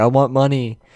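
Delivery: mock furious, angry shouted yell. Retelling how a homeless man answered the sister's gift of food: imitating someone yelling. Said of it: "yelled at her".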